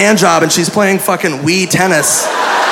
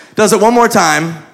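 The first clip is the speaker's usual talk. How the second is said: ordinary talk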